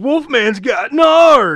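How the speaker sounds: high, loud, very slow drawn-out werewolf voice. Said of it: "and he says".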